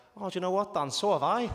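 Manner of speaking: put-on broad Liverpool Scouse accent. Retelling the manager's reply to the speaker, in Kenny's broad Scouse accent. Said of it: "really broad Scouse Liverpool accent".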